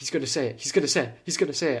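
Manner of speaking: mock pure panic, high, words rattled off tumbling. Retelling sitting in the cinema waiting for a line: imitating own past panic. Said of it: "I just went in a pure panic mode, going like".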